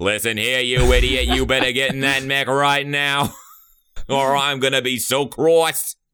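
loud high Boston accent. Recasting a cartoon character's dubbed line, the speaker does a JFK impression. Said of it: "He starts at the JFK".

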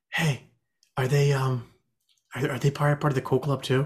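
hushed whisper in a put-on voice. Asking a fellow player's character about a group of students: whispering in character. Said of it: "I whispered to Maya".

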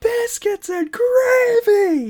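put-on yelp of pain. Retelling how a guy who hit his thumb yelled across the site: imitating Derek yelling in pain. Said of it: "from across the site, you just hear him go".

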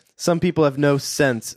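normal talking voice

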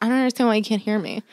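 mumbled, mushed, half-swallowed words. Imitating a mother who cannot hear well: imitating quiet mumbling. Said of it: "the quietest mumbler".

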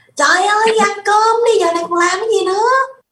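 very high, loud, shrill scolding shout. Recalling what she remembers most about her mother, imitating a mother shouting. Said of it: "lúc mà mẹ chị quát lên".

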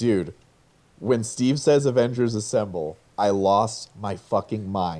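usual speaking voice

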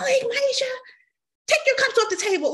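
very high, shrill, scolding scream. Retelling how a mom scolded the kids about cups: imitating mom screaming. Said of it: "my mom used to scream for everything".

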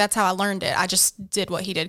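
ordinary delivery

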